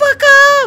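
very high voice. A player struggling to pick up honey in a game, high-pitched. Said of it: "So high pitched".

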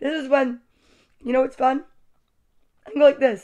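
speaking while chewing, mouth full. Demonstrating chewing upside down to the listeners, talking while chewing. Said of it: "I'm chewing upside down".

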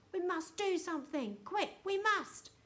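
whispering urgently. A grandson whispers to his grandpa while a voice counts down: urgent whisper. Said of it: "whispered Grout Charlie as the counting continued".

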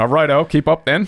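loud, high, clumsy bad English accent. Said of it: "we're bad at doing English accents".

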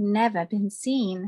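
plain reading voice

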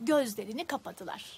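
ordinary delivery

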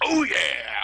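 loud, booming cartoon mascot voice. Joking with the other speaker mid-conversation, doing the Kool-Aid Man voice. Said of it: "like a fucking Kool-Aid man".

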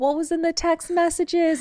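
very high, sweet, cute little voice. Retelling how Nancy asked a question: imitating Nancy's cute little voice. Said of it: "In her cute little voice".

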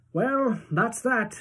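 bright upbeat cheer. Narrator reading Grandpa Joe's line to Charlie after no golden ticket, bright. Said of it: "said Grandpa Joe brightly".

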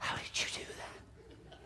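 hushed, amazed, awed whisper.

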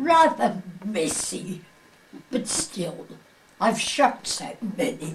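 put-on English accent, London officer voice. Retelling what an MI5 man from London told them, English accent. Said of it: "saying in his English voice".

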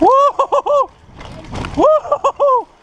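very high-pitched, jubilant shouts of joy.

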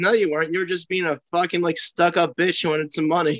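ordinary delivery

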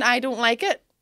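put-on loud child tantrum shouting. Retelling a child's tantrum with a hairbrush: imitating a child shouting. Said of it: "just shouting".

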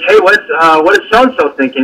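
plain

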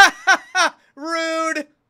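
mock booming, shrill, slow-spaced, very loud, drawn-out laugh. Retelling a viewer's reaction behind them in the theater: imitating a loud laugh. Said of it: "Loud as fuck in the theater".

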